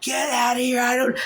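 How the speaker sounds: raw, very high guttural shout. Retelling charging at someone who walked into the home: imitating own guttural yell. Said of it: "this gut sound come from me".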